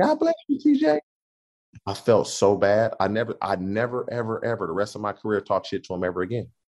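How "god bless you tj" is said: put-on voice, much higher pitch. Retelling what Troy said back after a taunt, imitating Troy's high-pitched voice. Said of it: "he has a high-pitched voice".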